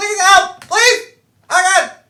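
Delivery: high, loud, desperate panicked pleading. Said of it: "the gnome in the branches goes".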